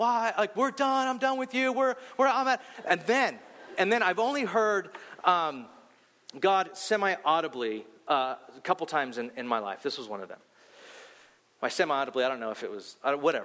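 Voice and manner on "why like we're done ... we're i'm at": high-pitched yelling. Recounting yelling out loud at god, retell your own yelling. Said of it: "I'm just yelling this like".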